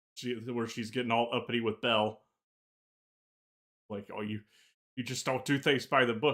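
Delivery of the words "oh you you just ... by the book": ordinary delivery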